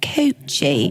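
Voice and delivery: put-on British accent. Showing how a word sounds best, in a british accent. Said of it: "in a British accent".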